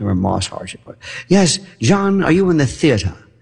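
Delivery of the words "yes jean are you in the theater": faux British accent in a theatrical style. Recalling people who put on a theatrical accent; faux British accent. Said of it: "kind of like a faux British accent".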